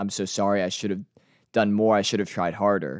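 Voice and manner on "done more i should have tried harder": ordinary talk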